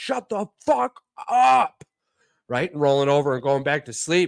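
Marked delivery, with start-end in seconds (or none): 0.0-1.8 mock very high, drawn-out, rasping rough scream. Woken by a noise at night, speaker retells screaming at it; retelling a scream. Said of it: "I just remember screaming out loud".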